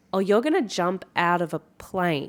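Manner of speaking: ordinary talk, nothing marked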